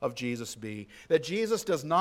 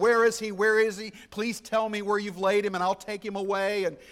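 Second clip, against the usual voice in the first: acted frantic pleading tone, pitched higher; 4 semitones higher, 4 dB louder than usual. Retelling a woman questioning the man she thinks is the gardener, acting out frantic asking. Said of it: "She's frantically asking".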